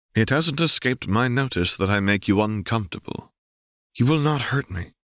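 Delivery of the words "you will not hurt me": certain, conclusive, final, pitch slightly raised. Shmi answers Ben, who thinks he makes her uncomfortable, with finality. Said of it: "she says with a certain finality".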